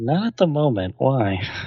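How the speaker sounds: furtive, secretive, meant to go unheard. In a role-play, a character turns back, trying not to let her hear: very low voice. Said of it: "in a very low voice, try not to let her hear".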